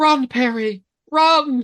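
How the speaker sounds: high, loud, flat mock child voice without urgency.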